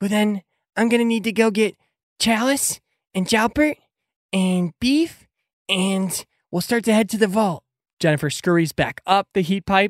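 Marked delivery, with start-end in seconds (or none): 0.0-7.6 high, squeaky sidekick character voice. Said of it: "and says".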